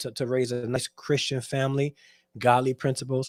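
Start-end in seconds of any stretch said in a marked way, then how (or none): none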